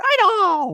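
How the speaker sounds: strained sports announcer call. Recalling a hockey announcer's save call: imitating Rick Jeanneret's strained call. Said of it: "He'd strain his voice there".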